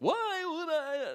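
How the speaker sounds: high, slow, drawn-out comic musing voice. Retelling a bar order mix-up, doing a Seinfeld impression. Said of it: "Seinfelded her a bit".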